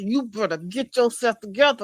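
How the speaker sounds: mock angry clenched-teeth voice. Retelling how really mad parents spoke: imitating a mad parent, through clenched teeth. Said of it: "They just put their teeth together".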